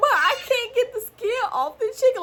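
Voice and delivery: very high, tearful, sobbing, pleading voice. Speaker retells answering her mother, imitating herself crying. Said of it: "I'm literally crying".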